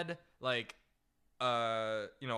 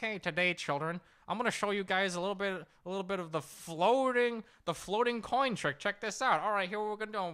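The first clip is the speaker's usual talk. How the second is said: high, pinched, nasal substitute teacher voice; 7 semitones higher than usual. Retelling how a substitute teacher introduced his magic trick to the class, in a nasally Mister Leone voice. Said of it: "he had this like kind of like nasally voice".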